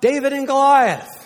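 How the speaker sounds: shrill, booming bellow, very high and very loud. A speaker retells a fictional character's Sunday school answer, retelling a bellowed answer. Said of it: "He bellowed out".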